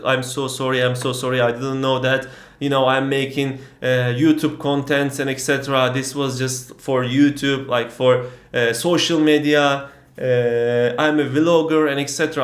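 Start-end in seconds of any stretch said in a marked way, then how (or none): none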